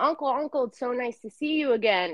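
mock eager, joyful, excited calling out, screaming. Retelling spotting an uncle at their party and greeting him: retelling own screaming. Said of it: "I remember I was screaming".

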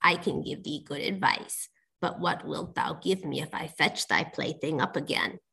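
hushed, breathy, whispered frog voice. Reading a fairy tale aloud, the frog answers her, frog voice. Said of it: "answered the frog".

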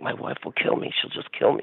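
breathy, anguished, agonized, fretting whisper. Retelling a customer's words as he debated a purchase: imitating someone agonizing. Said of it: "He was agonizing".

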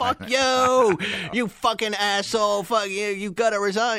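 mock furious screaming, high and drawn out. Describing political comedy, mimicking a comedian: imitating a comedian screaming. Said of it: "a comedian screaming".

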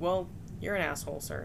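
usual speaking voice

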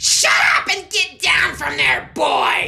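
raw, piercing, shrill, rough, very loud scream. A character orders the boy down from the stage, screaming. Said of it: "screamed Snitch".

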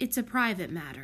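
usual speaking voice

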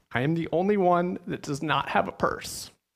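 put-on high, very confident, bold four-year-old voice. Retelling answering dad at age four, imitating confident four-year-old self. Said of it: "in my 4-year-old, very confident voice".

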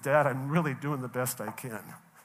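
ordinary talk

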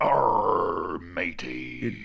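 put-on pirate voice. Agreeing the movie source is illegal, speaker cues a pirate sound: pirate voice. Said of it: "cue pirate sound".

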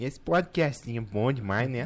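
put-on Brazilian mineiro regional accent. Showing off regional accents on a podcast, doing a mineiro accent.

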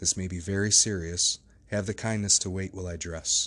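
plain

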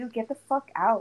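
acted mock-angry voice. Recounting a guy on his phone, the speaker retells her own angry words. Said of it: "Like I was so mad".

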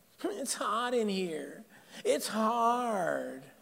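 put-on soft, defensive whiny child voice, hard drawn out. Speaker demonstrates the inner child voice to listeners, in a whining child voice. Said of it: "It's a whining voice".

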